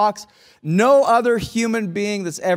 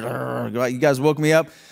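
very low, slow, irritated, drawn-out "you"; 8 semitones lower than usual. Picturing Jesus being woken during a storm, mock-grumpy Jesus. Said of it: "just like irritated".

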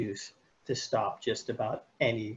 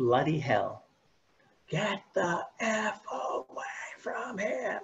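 mock screaming voice, higher pitch; 9 semitones higher than usual. Retelling how a roommate ran across the street: imitating someone screaming. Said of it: "he's screaming".

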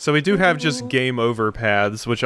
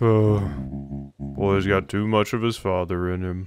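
dropped, glum tone; 4 semitones lower than usual. Voicing a character's line while playing, Eeyore voice. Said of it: "Giving you an Eeyore voice".

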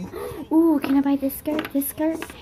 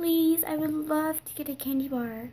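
put-on whiny pleading voice, quieter; 2 semitones higher, 4 dB quieter than usual. Speaker counting down a list, acting out how they beg: imitating a whiny voice. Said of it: "They act in that whiny voice to get everything".

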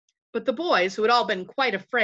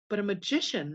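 plain reading voice

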